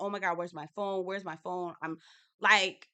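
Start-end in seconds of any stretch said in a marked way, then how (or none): 0.0-1.7 put-on frantic tone tipping into anger, rattled off. Retelling Uba's reaction to the missing phone: imitating a frantic, angry voice. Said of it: "you see the franticness in her voice".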